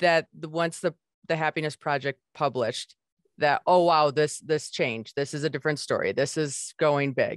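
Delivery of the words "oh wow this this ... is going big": ordinary talk, nothing marked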